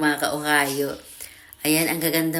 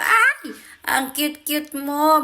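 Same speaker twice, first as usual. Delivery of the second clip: drawn-out, very high, delighted squeal; 11 semitones higher than usual. Telling viewers about meeting a cute bulldog at the dog run, retelling a squeal. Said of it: "napatili na naman ako".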